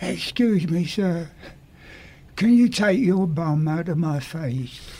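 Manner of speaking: put-on small child's voice. Retelling what a small person behind him said in a crowded elevator, little voice. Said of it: "I heard a little voice behind me say".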